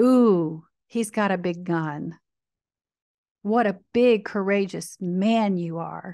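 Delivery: derisive, condescending, sarcastic, mocking tone. Speaker ridiculing a belief to the audience, mocking tone. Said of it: "Yes, I'm mocking".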